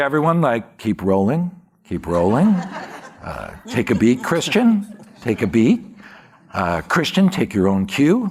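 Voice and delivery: easy, smooth jazz radio voice delivery. Recalling directing on set, the speaker repeats his microphone instructions in a smooth jazz voice. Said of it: "I do kind of smooth jazz voice on my microphone".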